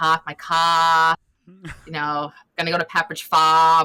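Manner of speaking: exaggerated, thick Boston accent, drawn-out "car". Showing how they would talk if they were from Boston, exaggerated Boston accent. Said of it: "but if I was from Boston, I would, you know, exaggerate".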